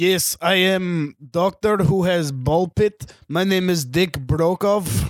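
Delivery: put-on crazy East European accent. Pitching the next Bond villain and playing him, as Dick Brokov, crazy East European doctor. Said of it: "a crazy East European doctor".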